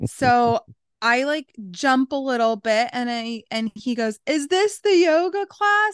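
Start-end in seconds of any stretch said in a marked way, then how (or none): 4.3-5.9 very high, loud screaming. Retelling a stranger who made the speaker jump in public, imitating a man screaming. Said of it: "And he's like screaming".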